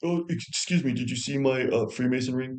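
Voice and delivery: put-on fake crying voice. Imitating Erica Kirk acting like she is crying: fake crying impression. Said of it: "Let me just act like I'm crying".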